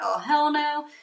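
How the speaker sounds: frantic, loud, high freak-out. Retelling confronting police during an arrest: imitating freaking out. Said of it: "freaking out".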